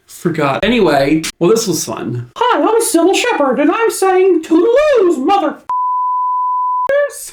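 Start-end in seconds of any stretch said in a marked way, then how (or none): 2.3-7.3 squeaky, very high cartoon voice, f sounds stretched out. Signing off the video in character: Sybil Shepherd impression. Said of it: "Why do I sound like Mickey Mouse?".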